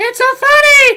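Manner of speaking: very high, very loud laugh with voice breaking. Reacting to something hilarious while chatting, voice cracking with laughter. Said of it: "My voice is cracking!".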